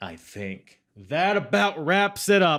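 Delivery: high, loud yelling.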